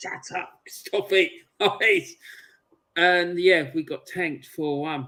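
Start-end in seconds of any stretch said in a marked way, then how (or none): 0.0-2.1 put-on scolding voice, high, kept light and understated. Retelling a footballer yelling at the crowd: imitating Willie Young shouting. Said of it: "you could hear him shouting at the North".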